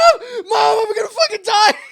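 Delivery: put-on full-blown panic, shrill, very high and loud. Retelling calling to Mom while a tiger has a finger, imitating panicked freaking out. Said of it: "I'm fucking losing it".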